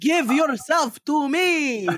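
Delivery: put-on vampire voice. Counting off with a co-host, speaking in Count Dracula voice. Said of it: "the Count Dracula".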